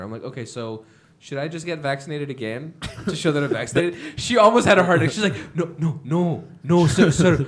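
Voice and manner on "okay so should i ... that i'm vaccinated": ordinary delivery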